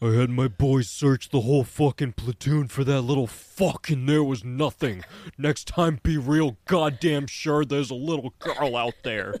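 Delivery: extremely deep, low-pitched put-on voice. Telling a story, the speaker acts out a man's lines in a Vin Diesel–Red Foreman voice. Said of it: "with the deepest voice in the world".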